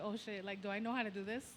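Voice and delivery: ordinary delivery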